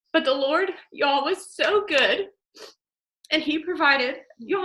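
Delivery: tearful, crying while talking. Sharing a family story of hard times, crying while talking. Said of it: "I'm sorry, I'm crying".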